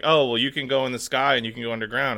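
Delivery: plain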